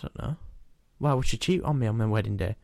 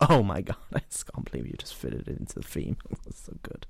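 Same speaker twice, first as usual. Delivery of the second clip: breathy, dramatic voice; 5 semitones lower, 6 dB quieter than usual. Reacting to a segment name fitting the theme: Kim Kardashian voice. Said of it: "You sounded like Kim Kardashian".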